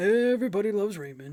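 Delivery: terrible, clumsy, creepy put-on character voice. Doing a terrible, creepy impression of Brad Garrett saying the show's title: terrible Brad Garrett impression, creepy. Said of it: "terrible impression".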